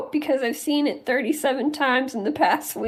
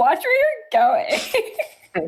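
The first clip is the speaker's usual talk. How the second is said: very slow, drawn-out sing-song with swooping pitch. Imitating how another speaker said a line: Most Popular Girls in School Barbie voice. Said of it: "you said it like one of those, one of the Barbies from Most Popular Girls in School".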